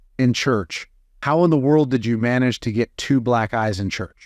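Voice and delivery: ordinary delivery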